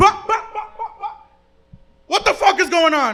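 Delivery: high-pitched, shrill yell. Retelling how his mom burst into the room: imitating his mom yelling. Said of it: "just come in like".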